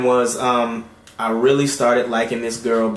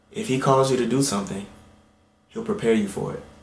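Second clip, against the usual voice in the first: gentle, soft, soothing voice; 5 dB quieter than usual. Retelling a phone call, quoting what she said to the speaker: imitating a gentle voice. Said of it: "in such a gentle voice".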